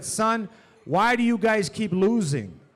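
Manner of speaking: put-on stern, demanding father voice. Retelling how a stern father talked after basketball games: imitating a stern dad. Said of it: "he would look me in the eye and he said".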